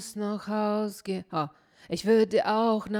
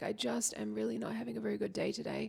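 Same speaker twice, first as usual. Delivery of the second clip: very soft, put-on ailing croak, quiet creaky sick voice; 10 dB quieter than usual. Calling your boss to get a day off: put-on sick voice. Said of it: "you're like feeling like you're just a little bit sick".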